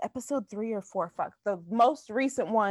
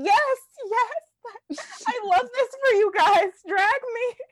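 over-the-top, very high, loud, supportive gushing. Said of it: "but then she's like".

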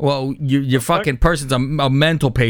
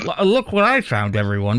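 lisping, stumbling on the first l; 3 semitones lower than usual. Retelling what Giuliani said about finding a laptop: imitating Giuliani's lisp. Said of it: "with his lisp".

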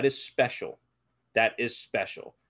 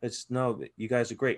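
imitated whisper. Recounting JB coming in, trying not to wake anybody: imitating JB whispering. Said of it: "He's whispering like a fucking church mouse".

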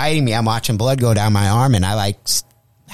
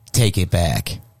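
sudden switch to a low, demonic devil voice; 4 semitones lower than usual. Retelling a girl's reply after he called the guy a mooch, devil-like voice. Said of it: "to be like the devil".

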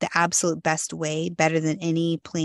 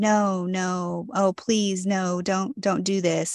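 slow, drawn-out mock begging, plea after plea; 2 semitones higher than usual. Recounting a phone call with him, the speaker acts out his begging. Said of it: "it was a lot of just begging".

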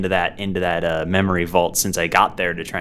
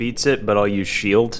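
ordinary talk

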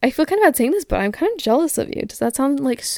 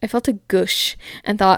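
ordinary talk

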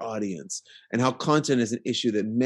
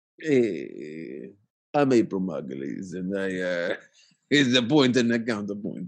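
fake, put-on Italian accent; 2 semitones lower than usual. Introducing the segment after being asked to: put-on Italian accent. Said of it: "only in an Italian accent, please".

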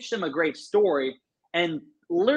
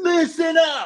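mock calling-out shout, very high and loud; 11 semitones higher, 5 dB louder than usual. Retelling calling out to a long waiting line: retelling own loud call. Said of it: "I said it really loud".

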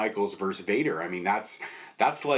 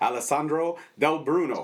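put-on Italian accent, pitched up; 6 semitones higher than usual. Welcoming a guest onto the show by name: put-on Italian accent. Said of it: "the Italian accent?".

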